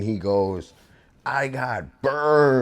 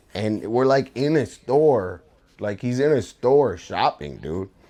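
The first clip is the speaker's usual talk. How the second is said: ordinary talk, nothing marked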